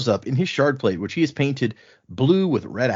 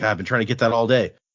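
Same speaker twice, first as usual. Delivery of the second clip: plain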